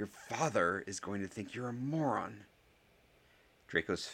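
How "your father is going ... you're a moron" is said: words hissed out. Narrator reading a story, Harry speaking to Draco, hissed. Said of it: "hissed Harry".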